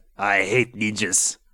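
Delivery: put-on Spanish accent.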